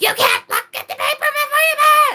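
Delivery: screeching yell, very high-pitched and very loud. Retelling how a gas station lady screamed at the speaker: imitating someone screaming. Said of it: "screamed at me".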